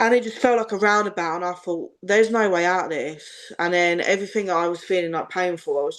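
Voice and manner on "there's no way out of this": ordinary talk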